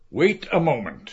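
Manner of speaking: ordinary delivery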